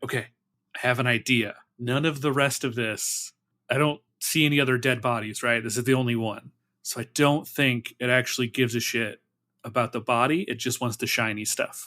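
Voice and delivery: whispering quietly. Whispering a plan to the party in character: whispering quietly. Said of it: "I'm gonna whisper and quietly be like".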